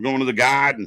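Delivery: Boston accent, put on. Talking about an event in Boston, the speaker tries a put-on Boston accent. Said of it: "That's my Boston accent".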